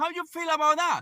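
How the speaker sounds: heated, hot, confrontational, challenging delivery. Pressing the other person for an answer to the question, yelling. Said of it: "stop yelling in my ear".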